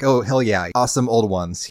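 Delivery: ordinary delivery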